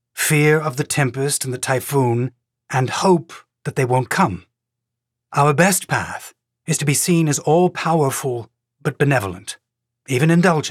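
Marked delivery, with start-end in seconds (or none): none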